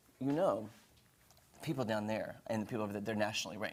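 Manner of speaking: low, soft under-the-breath aside. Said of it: "kinda said under his breath".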